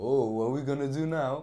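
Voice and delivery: stilted, wooden, stiff and awkward, no ease. Retelling own greeting to a date in the past: imitating own stiff awkward greeting. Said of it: "all stiff and awkward".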